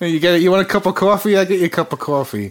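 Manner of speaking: put-on New York accent. Showing off American accents a New Yorker friend taught him: New York accent. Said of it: "New York is a bit more darker".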